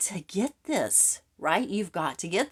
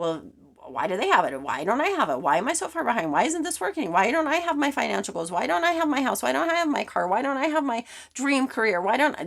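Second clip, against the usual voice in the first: high, nagging, complaining whine; 5 semitones higher than usual. Acting out a jealous inner voice asking why others have it: naggy voice. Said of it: "do you hear that naggy voice?".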